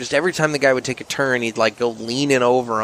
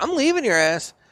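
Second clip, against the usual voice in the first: put-on, very high, yelled call; 12 semitones higher than usual. Retelling yelling at a friend who ran off: retelling a yell. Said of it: "I yell at him".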